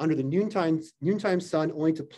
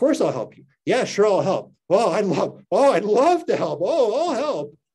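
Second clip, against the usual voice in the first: loud, theatrical, affected delivery; 4 semitones higher, 5 dB louder than usual. Retelling how Janice mocked Kate agreeing to help: mocking Kate, affected voice. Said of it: "in an effective voice, ostensibly mocking Kate".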